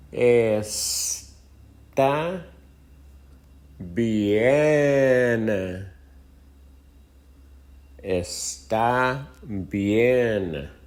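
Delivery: very slow, drawn out. Showing a learner how to say okay: said slowly. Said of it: "let me slow it down".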